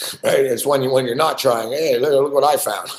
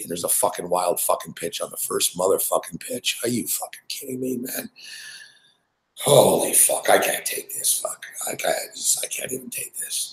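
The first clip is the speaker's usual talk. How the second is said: upset, exasperated, breathy whispered swearing; 6 semitones lower, 7 dB quieter than usual. Reacting to a wild pitch on the first pitch: upset and frustrated. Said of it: "I don't know why I'm getting so upset here".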